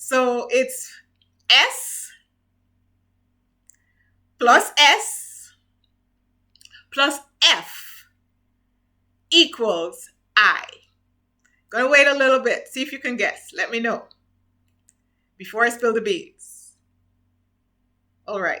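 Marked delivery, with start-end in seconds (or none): 0.0-10.6 very slow, loud, deliberate pace, spelled out. Posing an equation for viewers to guess: saying it slowly. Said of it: "I'm going to say this slowly".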